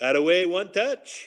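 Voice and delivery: put-on high-pitched voice with French accent. Retelling a practice a few days later, the speaker quotes Benoit Hogue's French accent. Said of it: "his French accent".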